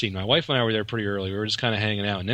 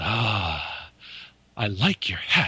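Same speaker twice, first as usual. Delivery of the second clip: very slow, sincere delivery with a long "ah". Retelling an actor complimenting a hat: Avery Brooks voice. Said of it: "That's exactly how he talks".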